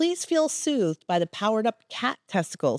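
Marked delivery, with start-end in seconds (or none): none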